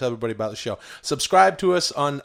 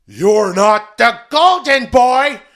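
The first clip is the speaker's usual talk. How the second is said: shrill put-on comic voice, higher and louder; 11 semitones higher, 10 dB louder than usual. Continuing the failed impression, now sounding like Gilbert Gottfried. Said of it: "I'm Gilbert Godfrey".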